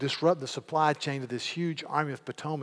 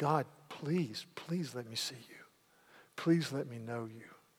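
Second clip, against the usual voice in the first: acted pleading, much quieter; 6 dB quieter than usual. Speaker tells brothers and sisters of a man pursued by enemies, acting out a plea. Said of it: "and he's pleading".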